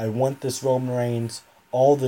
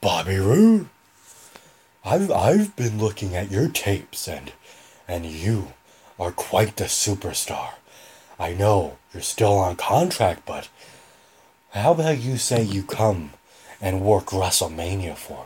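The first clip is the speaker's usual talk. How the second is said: low, scratchy voice from the throat; 4 semitones lower than usual. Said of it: "my throat needs to be more scratchy for Vince".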